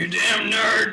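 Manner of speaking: loud shout in anime character style. Showing off character voices being practiced again, Bakugo voice. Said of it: "trying to pick up my Bakugo voice".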